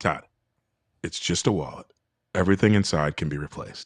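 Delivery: put-on soft reassuring voice. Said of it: "your soft fucking".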